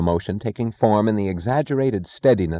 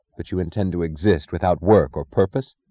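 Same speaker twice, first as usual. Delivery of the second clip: usual speaking voice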